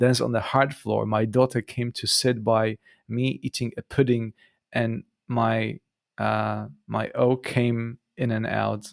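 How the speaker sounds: ordinary delivery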